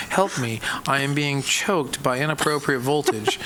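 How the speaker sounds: ordinary talk, nothing marked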